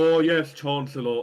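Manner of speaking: put-on really weird, high, loud posh British accent. Discussing an actress's accent, trying it out in a really weird british accent. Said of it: "doing a really weird British accent".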